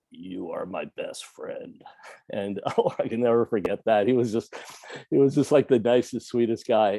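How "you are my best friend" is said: slow, soft, throaty, barely-there guttural whisper. Retelling what a patient said waking from ketamine, in a guttural soft voice. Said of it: "in this really guttural soft voice".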